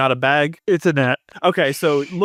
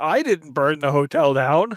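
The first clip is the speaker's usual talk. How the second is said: plain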